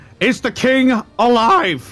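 shouting. A player in a tabletop game calls out to an ally mid-battle, shouting a question. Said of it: "I'm just gonna shout".

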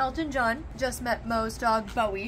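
soft talk through a mouthful, chewing. Out with the dog on a first big day out, talking while chewing. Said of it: "Ignore the fact that I'm chewing a bunch of nuts".

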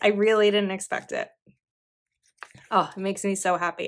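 tearful, emotional, on the verge of crying. Opening a gift of baked cookies on YouTube, tearful and emotional. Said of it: "I don't often cry on YouTube".

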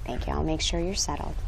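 rushed, very quiet, hushed half-whisper. Teacher during a class discussion, half-whispering to a student.

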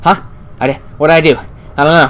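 panicked voice. Player reacts as the lights flicker and the music picks up: panicking. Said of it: "I'm panicking".

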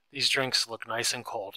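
ordinary delivery, nothing marked

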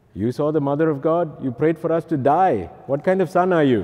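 bad put-on Indian accent. Speaker quotes their parents, in a lousy indian accent. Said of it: "my Indian accent is quite lousy".

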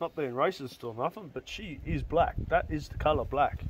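ordinary delivery

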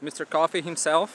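ordinary talk, nothing marked

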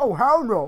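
put-on scared, alarmed, frightened exclamation. Explaining why the voice changed after getting scared, retelling own scared reaction. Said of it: "because I got scared. I'm like".

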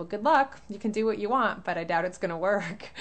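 fast, smug, condescending, dismissive tone. Retelling the vet's reply on hearing of a holistic vet: mock-smug reply. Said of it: "she very smugly replied".

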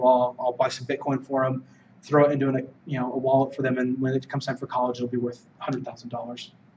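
ordinary talk, nothing marked

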